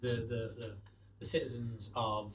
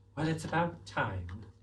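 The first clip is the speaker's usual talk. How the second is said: put-on female voice, higher pitched; 5 semitones higher, 5 dB louder than usual. Voicing a woman answering her rescuers, in a put-on female voice. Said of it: "I do like how your female voice".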